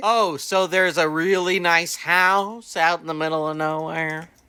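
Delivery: mock sarcastic tone. Retelling own reaction while watching a movie: retelling own sarcasm. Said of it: "I was being very sarcastic about the movie".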